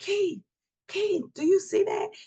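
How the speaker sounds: mock alarmed, frightened cry, voice very high. Retelling seeing a shadow over the room at night: imitating own screaming. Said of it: "And I started screaming".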